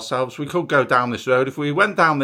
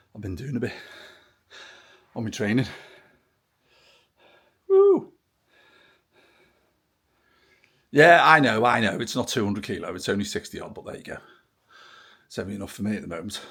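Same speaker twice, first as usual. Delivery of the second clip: winded, out of breath, panting, lower; 5 semitones lower, 4 dB quieter than usual. Greeting viewers just after a training session, out of breath, panting. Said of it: "excuse me puffing and panting a bit".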